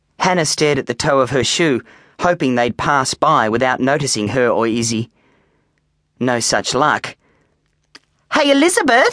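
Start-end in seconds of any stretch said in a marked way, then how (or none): 8.3-9.2 very high-pitched, loud, laughing through words. [name] calls to Izzy by her real name, laughing. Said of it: "[name] laughed".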